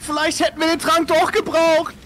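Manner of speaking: very high, loud, slow scream.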